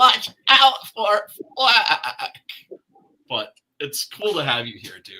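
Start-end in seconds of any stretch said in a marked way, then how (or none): 0.0-2.3 shrill, very high, very loud, drawn-out game voice. Teasing the co-host about his bad audio: IntelliVoice game voice. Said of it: "That's kinda how you're saying".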